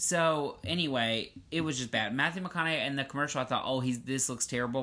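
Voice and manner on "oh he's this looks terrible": ordinary talk, nothing marked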